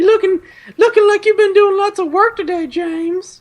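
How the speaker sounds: very high, very loud, belted MILF voice, wrestling-promo style. Speaker acts out a woman handing the listener sweet tea; MILF impression like wrestling voice. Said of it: "your MILF impression sounds a lot like your uh, wrestling impression".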